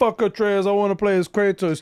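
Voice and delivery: blunt brash blurt. Describing how some people put it, mimicking their brash way. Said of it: "they say it in a very brash way".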